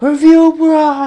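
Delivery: very high, very loud screaming holler. Speaker retells a man in a passing sedan yelling at him, screaming from a car. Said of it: "I hear him screaming out the window".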